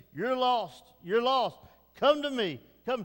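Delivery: put-on pleading cry. Speaker quoting God calling to his heart, acting out a pleading cry. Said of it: "He's crying out, he's pleading".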